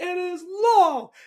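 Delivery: booming, very loud, very high, grand declaring tone. Retelling what a woman said that morning, quoting her in Oprah voice. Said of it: "in that Oprah voice".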